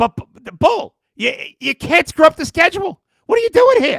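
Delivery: shrill, booming, very loud, high-pitched outburst, tripping over words. Retelling how a radio host criticized a schedule mistake: Mad Dog impression. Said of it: "you'll understand the impression".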